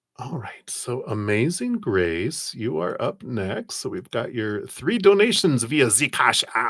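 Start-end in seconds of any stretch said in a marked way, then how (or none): 3.8-6.7 German accent slipping in while reading. Thanking viewers for donations on their YouTube channel, with a German accent. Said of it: "my German accent com- kicking in again".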